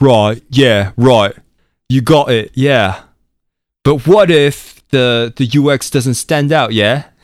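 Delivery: put-on Cockney accent. Retelling how the team answers someone explaining a design, in a cockney accent. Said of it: "started talking in a Cockney accent".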